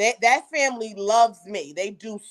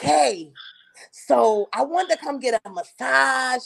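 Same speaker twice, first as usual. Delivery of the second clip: put-on male voice; 2 semitones higher than usual. Retelling what a male caller says, imitating a male caller's voice. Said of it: "I'm trying to do his voice so you can catch".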